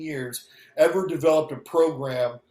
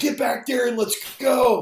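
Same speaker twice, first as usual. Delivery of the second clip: put-on scream, pitched much higher; 6 semitones higher than usual. Retelling a former catcher screaming at him from the dugout, imitating B.J. Surhoff screaming. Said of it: "B J Surhoff is screaming at me".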